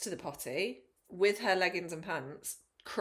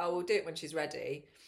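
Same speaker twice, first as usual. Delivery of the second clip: ordinary talk, nothing marked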